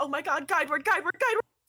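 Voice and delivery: frantic panicked cry, high and rushed. Voicing a character jumping in place after an ally is shot: panicked NPC voice. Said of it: "Wayward starts, like, jumping in place, and he's like".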